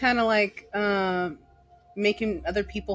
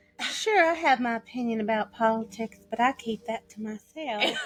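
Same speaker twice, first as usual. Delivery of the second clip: put-on rural Southern voice. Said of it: "Be like [name]".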